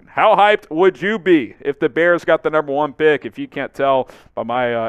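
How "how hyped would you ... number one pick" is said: hyped, louder, with increasing voice inflection. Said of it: "increased voice inflection there".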